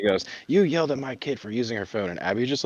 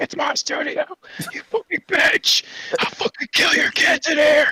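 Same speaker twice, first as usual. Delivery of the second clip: loud, raised, unrestrained outburst; 5 dB louder than usual. Retelling what Abby Lee said in the dance studio: imitating Abby Lee. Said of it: "And she's like".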